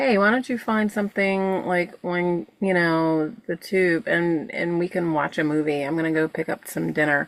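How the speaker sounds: usual speaking voice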